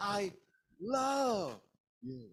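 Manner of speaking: emphasis on the word love. Explaining how much emphasis is enough: emphasis on love. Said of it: "so I only emphasize on the word love".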